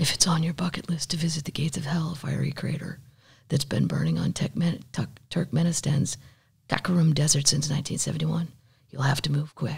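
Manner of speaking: quiet announcer voice. Showing another person how they read, the speaker does a quiet Masters-broadcast voice. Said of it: "It's always very quiet".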